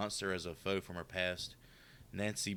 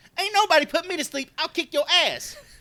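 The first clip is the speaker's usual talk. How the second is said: put-on shrill, very loud, high Chicago accent; 16 dB louder than usual. Quoting a big guy's line from a movie, in a Chicago accent impression. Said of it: "he's got like a Chicago accent in there too".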